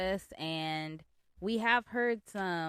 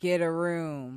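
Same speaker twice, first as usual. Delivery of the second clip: put-on older woman voice, louder; 2 semitones lower, 5 dB louder than usual. Retelling what an older lady said to a hugging couple: imitating an older lady. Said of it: "she's just like".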